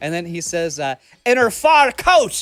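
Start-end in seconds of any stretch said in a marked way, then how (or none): 1.2-2.4 put-on Irish accent, higher, louder, slower. Quoting what he says in a performance called hysterical, imitate his Irish accent. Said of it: "he said something with the Irish accent".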